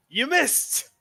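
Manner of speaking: loud yelling. Voicing a character in the game taunting a player: yelling. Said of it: "He just yells".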